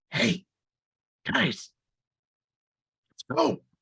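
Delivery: theatrical stage whisper, loud and very high. Voicing a character at a door opening: stage whisper. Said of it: "stage whisper".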